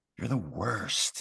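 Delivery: soft, hushed whisper, up close. Playing a character who leans close to an enemy: whispering. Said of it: "I just, like, whisper".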